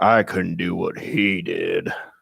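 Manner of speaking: crazy deep voice, dropped way down, rough, creaky. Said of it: "in this crazy deep voice".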